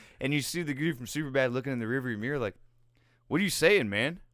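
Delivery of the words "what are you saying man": mock worked-up, agitated voice, raised and high. Retelling a driver looking in the rearview mirror: imitating someone agitated. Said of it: "getting agitated".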